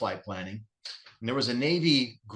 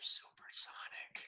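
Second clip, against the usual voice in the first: secretive, very hushed whisper. Retelling telling a kid in the jet they're supersonic: retelling a whisper. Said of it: "Why are you whispering?".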